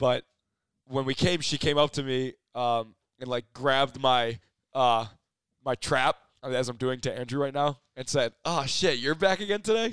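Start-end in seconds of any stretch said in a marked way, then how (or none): 8.4-9.9 put-on playful teasing jab, pitched up. Retelling what a woman said as she grabbed the speaker's shoulder: retelling a joking remark. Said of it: "Like, jokingly".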